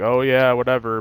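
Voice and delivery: ordinary talk, nothing marked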